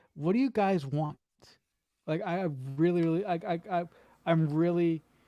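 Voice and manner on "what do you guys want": ordinary talk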